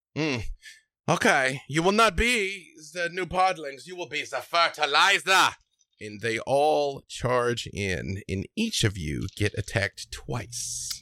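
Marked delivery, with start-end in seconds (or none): 0.2-5.6 whole crowd yelling at once, high mob scream. Voicing townspeople charging the heroes in a clearing: screaming townspeople. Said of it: "all of the townspeople at once just scream out".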